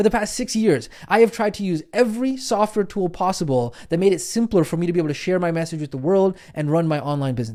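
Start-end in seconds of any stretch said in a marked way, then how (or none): none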